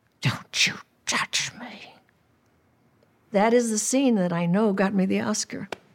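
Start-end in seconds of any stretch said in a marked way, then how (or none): 0.2-1.9 hushed whisper through gritted teeth. An actress shows how she delivered her Oscar-winning film line; through clenched teeth. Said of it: "it was through my teeth".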